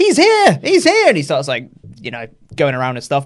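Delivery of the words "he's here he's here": mock thrilled, very high, drawn-out excited yell. Retelling a wrestling segment when the lights cut out: imitating excited yelling. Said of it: "He gets very excited".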